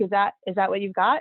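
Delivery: ordinary talk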